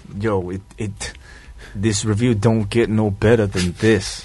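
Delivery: a touch of put-on New York accent. Showing how to add New York to a review delivery, in a put-on New York accent. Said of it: "Gotta incorporate a little New York into your delivery".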